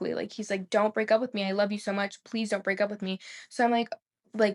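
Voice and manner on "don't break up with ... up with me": mock hysterical crying and sobbing. Retelling how her boyfriend woke her in the night; imitating hysterical crying. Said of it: "crying hysterically".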